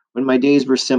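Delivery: plain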